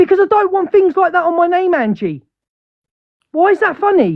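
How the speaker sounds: shouting angrily. Arguing with Angie, who laughs at the accusation: shouting angrily. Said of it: "Can you stop shouting?".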